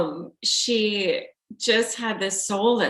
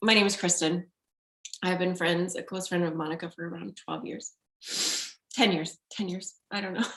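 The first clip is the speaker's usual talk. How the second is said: soft, nervous, flustered, self-correcting rambling; 2 semitones lower, 5 dB quieter than usual. Speaker introducing herself to an audience as a longtime friend, nervous and flustered. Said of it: "Sorry, I'm so nervous".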